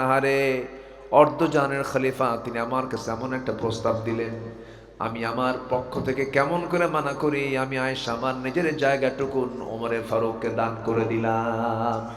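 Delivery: ordinary delivery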